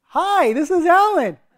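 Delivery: very high, drawn-out, happy, peppy voice. Speaker describes going from angry to answering an unknown caller, imitating a peppy phone greeting. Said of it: "I'm like really peppy and I'm really happy".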